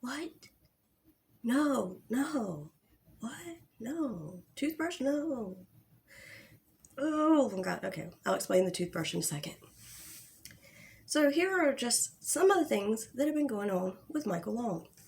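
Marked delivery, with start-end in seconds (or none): 0.0-5.6 very slow, drawn-out feigned bewilderment. Retelling someone's fake-sounding denials, imitating someone sounding confused. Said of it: "he seems so confused".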